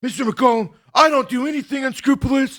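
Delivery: very high, shrill, angry yelling. Retelling a phone argument with an insurance agency, imitating a woman yelling at him. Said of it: "she's like yelling at me".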